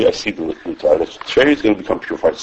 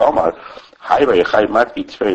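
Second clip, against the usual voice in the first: plain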